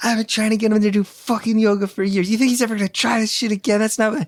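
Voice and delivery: high, rapid, put-on heated shouting rant. Telling how his wife confronted the guy after the yoga class, retelling his wife's shouting. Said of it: "gets in a shouting match".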